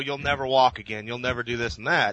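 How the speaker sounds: ordinary talk, nothing marked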